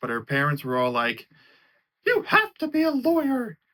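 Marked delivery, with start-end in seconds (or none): 2.1-3.5 squeaked high with swooping pitch. Retelling what a movie character's parents told her, in Mickey Mouse voice. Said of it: "why did I do the Mickey Mouse voice?".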